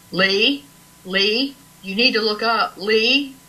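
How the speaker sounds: slow, unhurried, drawn-out, put-on big-man voice. Retelling what a big teammate said during a sighting, imitating Tim Scott's booming voice. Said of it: "he has this booming voice".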